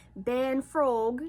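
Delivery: loud put-on Australian accent played for laughs. Retelling someone's words, imitating a funny Australian accent. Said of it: "she had like this really funny Australian accent".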